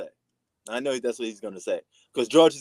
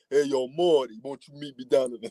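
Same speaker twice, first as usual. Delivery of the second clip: put-on Italian New York accent. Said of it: "that that's an Italian type of thing".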